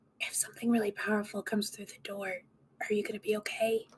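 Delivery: quiet, hushed, whispered aside. A player having their character whisper a question to a companion in the game, whispering. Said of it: "whisper to Lucius".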